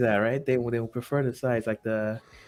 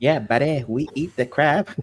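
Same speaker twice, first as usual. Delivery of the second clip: put-on Canadian accent, higher; 3 semitones higher, 3 dB louder than usual. Told his crab meal is a weird Canadian thing, he does a South Park Canadian accent. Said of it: "South Park Canadian".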